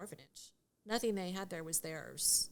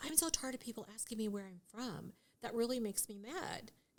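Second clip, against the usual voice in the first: ordinary delivery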